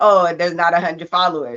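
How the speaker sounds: imitated sarcastic tone. Retelling what was said to him: retelling own sarcastic remark. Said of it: "You didn't hear the sarcasm in, in my voice".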